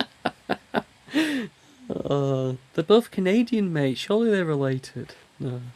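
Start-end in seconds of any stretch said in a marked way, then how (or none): 2.7-5.1 high, mock-certain sarcastic tone. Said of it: "I say that with a sarcastic tone".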